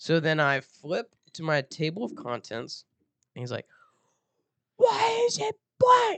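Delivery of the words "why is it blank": very high, shrill put-on screaming. Retelling how a teacher yelled at them before the class, imitating a teacher screaming. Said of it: "He's literally screaming at me".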